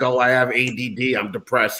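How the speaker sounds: slow, mopey, whiny, complaining caveman voice. Mocking the idea of a complaining caveman: imitating a complaining caveman. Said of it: "you never saw a caveman being like".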